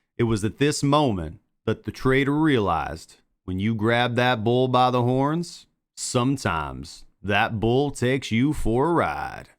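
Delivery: slow, put-on, somewhat southern drawl. Delivering a narrated story line in kind of a southern accent. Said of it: "I think you got to do like a kind of a southern accent when you do this".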